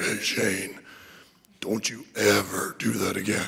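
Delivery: low, dropped man's voice. Recalling being thrown against the glass, quoting the man: imitating the man's voice. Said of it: "in his voice where he's like".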